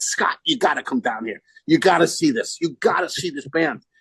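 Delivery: animated voice, swooping and climbing as it goes. Retelling calling a bandmate to come see a band: retelling a scream. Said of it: "I screamed at Scott".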